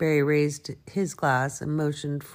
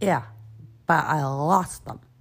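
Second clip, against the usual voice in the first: ordinary delivery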